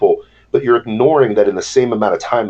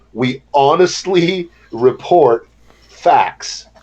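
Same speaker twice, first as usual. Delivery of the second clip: very slow, deliberate, word-by-word emphasis; 5 semitones higher than usual. Repeating the same statement a third time, said really slow. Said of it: "Let me say that really slow".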